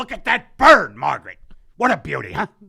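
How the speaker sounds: indignant, very loud, high, angry bark. Speaker impersonates an angry nature person addressing margaret: mock-angry nature person. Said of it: "an impersonation of an angry nature person".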